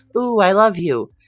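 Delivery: cheery, friendly tone. Describing a character's real personality, imitating a happy, friendly voice. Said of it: "very happy and friendly and being like".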